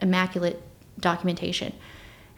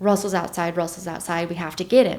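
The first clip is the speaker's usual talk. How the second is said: normal talking voice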